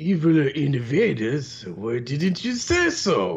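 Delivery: stock eighties cartoon voice, swooping and drawn-out. Recapping a cartoon episode, imitating the character's stereotyped voice. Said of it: "That's why I keep doing that".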